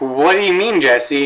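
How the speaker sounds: ordinary talk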